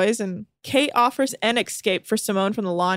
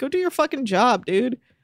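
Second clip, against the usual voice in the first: serious, heated, raised voice, words rattled off; 3 semitones higher than usual. Talking to another speaker about Mark Wahlberg, in a raised voice. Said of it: "Sorry to raise my tone".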